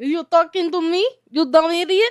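put-on Russian accent. Playing a character the others are talking to, back in a put-on Russian accent. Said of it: "I just totally lost the accent".

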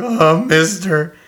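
voice cracking on the word. Imitating the stock kid from every store in the Simpsons universe: voice-cracking Simpsons store kid. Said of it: "his voice cracks like the".

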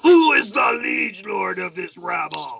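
loud, high, drawn-out yell. Shouting down from the wall at an enemy army: yelling in character. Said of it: "lean over and yell".

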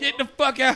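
loud, high-pitched yell. On a stream, telling someone to get out, yelling into the mic. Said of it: "My bad, I'm yelling in the mic".

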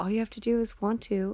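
put-on little voice. Quoting an actor's line from the show: imitating Adam Brody's little voice. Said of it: "his little voice when he's like".

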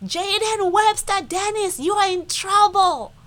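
very high, top-of-the-lungs, full-lung shout. Retelling calling a two-year-old downstairs after finding flour everywhere, retelling a full-lung shout. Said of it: "I call on him on top of my lungs".

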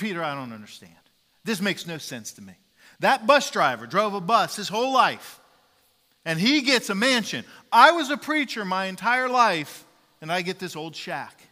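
acted-out, very loud, angry outburst. Telling a joke, acting out the preacher complaining to Peter: angry. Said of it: "then he starts to get angry".

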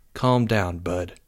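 quiet, soft, hushed half-whisper under the breath. A student half-whispers to a companion before they leave the lunchroom, half-whispered. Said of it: "Jake whispered".

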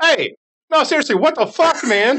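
very high, shrill, indignant shout. Voicing people down in the street after a chicken hits the window: angry people shouting from the street. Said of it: "you hear the voices of people down below going".

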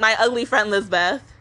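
plain

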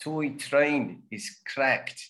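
South African accent, punchy hard T and C. Repeating a practice sentence after another speaker: South African accent. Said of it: "it's easier to do a South African accent".

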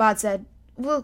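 plain reading voice

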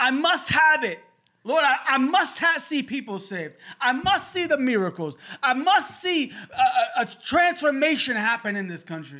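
screamed, shouted, pitched high. Praying aloud about persistence, screaming a prayer. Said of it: "As I'm screaming into the mic".

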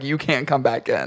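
plain

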